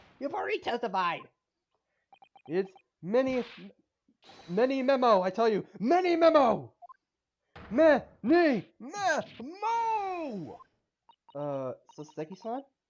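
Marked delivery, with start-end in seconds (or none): 2.5-10.6 yelling in a character voice. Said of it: "What are you yelling about?".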